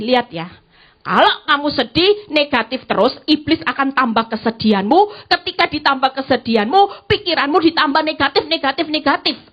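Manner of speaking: normal talking voice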